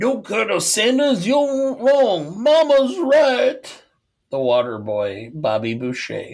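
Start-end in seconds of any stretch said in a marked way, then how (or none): 0.0-3.8 put-on cartoon rooster voice, much higher. Do a line in the water boy bit about Bobby Boucher in a Foghorn Leghorn voice. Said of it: "Why did you do it as Foghorn Leghorn?".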